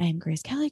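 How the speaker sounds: put-on muttering under breath. Retelling a scene in which Blair speaks under her breath: Blair muttering under her breath. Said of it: "Blair under her breath is like".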